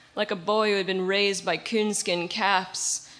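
ordinary delivery, nothing marked

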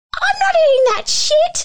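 very high, loud, sudden blurted outburst. Retelling what his younger self said at a dinner table, retelling a loud outburst. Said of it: "like so loud".

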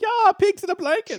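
squeaky way-up-high voice. Quoting the little pigs from Shrek Two: Shrek little pigs voice. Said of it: "quote the little pigs from Shrek".

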